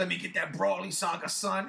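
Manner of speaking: strung-out, rough, creaky rasping voice. Retelling own request to a bootlegger: imitating own past words like a crackhead. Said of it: "Like a crackhead".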